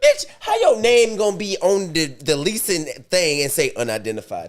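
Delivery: lively stand-up comic voice, pitch swinging wildly. Reacting to a news report, the speaker puts on his Katt Williams voice. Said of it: "I'm gonna get my Cat Williams".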